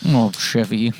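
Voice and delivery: disappointed, let-down delivery. Saying the name Chevy in Lorne Michaels' voice: mock-disappointed Lorne Michaels voice. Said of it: "He has to sound disappointed".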